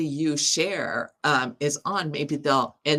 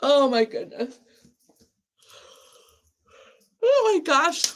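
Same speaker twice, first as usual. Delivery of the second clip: very high squeaky speech through a yawn; 11 semitones higher than usual. A host live tonight, dealing with camera issues, speaks while yawning. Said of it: "I'm yawning".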